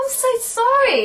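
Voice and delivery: very high, heartfelt, earnest tone. Retelling apologizing on the phone after a joking insult: imitating own earnest apology. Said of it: "like that".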